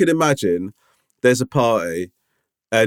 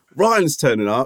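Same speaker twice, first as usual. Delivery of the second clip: usual speaking voice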